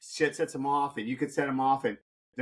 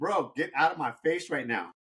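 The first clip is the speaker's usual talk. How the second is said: mock taunting, put-on taunting tone. Retelling a fight, quoting what he said to the other guy: retelling trash talk. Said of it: "I was like talking shit to him".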